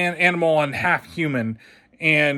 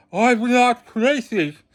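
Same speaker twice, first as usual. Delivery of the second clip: higher, lousy fake British accent with a lisp; 7 semitones higher than usual. Imitate the film's actor playing the role: Christopher Robin, terrible British accent, weird lisp. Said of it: "trying to do a really terrible British accent".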